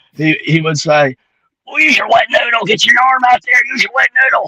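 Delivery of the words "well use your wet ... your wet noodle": very high, slightly hoarse little voice. Recalling what his basketball coach always used to say on the court; hoarse voice imitation. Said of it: "with that little hoarse hoarse voice".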